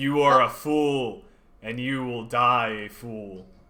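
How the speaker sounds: deep, very slow skull voice, every word dragged. The game master voices the skull answering a player: deep Galaxucax skull voice. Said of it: "a deep voice emanates".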